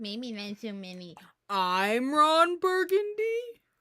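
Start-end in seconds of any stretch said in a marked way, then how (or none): 1.5-3.4 big, sing-song character voice. Quoting a movie line in the voice of Patrick: Patrick voice. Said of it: "why'd you say it like Patrick?".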